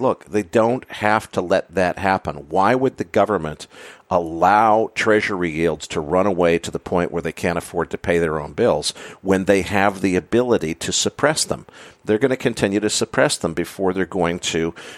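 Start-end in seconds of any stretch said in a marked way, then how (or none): none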